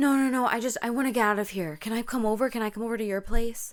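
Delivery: mock frightened, panicked, desperate pleading voice. Retelling her answer when offered help, imitating someone panicking. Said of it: "And panic".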